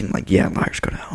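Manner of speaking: muttered under breath. Retelling what she said to the three of them outside the classroom, under her breath. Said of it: "said it under her breath".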